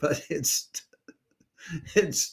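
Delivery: loud, high voice, laughing through the words. Announcing when an event series returns, laughing while talking. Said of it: "I'm sorry if I'm laughing".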